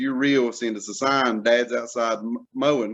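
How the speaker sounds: plain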